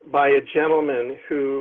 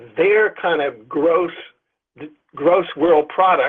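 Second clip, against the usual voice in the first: emphasis on gross, stretched slow and louder. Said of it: "emphasis on gross".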